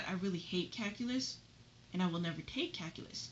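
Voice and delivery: quiet whispered voice. Retelling a side comment while the girls talk to distract a guy; whispering. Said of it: "And then I'm whispering on the side".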